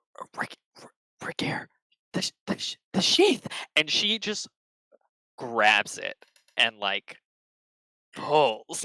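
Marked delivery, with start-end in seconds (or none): 0.2-3.5 stammering, urgent, fast, excited whisper. Voicing Ada whispering to Vergere about the glowing sheath: whispering excitedly.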